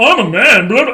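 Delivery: loud, puffed-up, chest-out macho tough-guy bluster. Showing how women imitate men: imitating an overly deep male voice. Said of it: "overly deep".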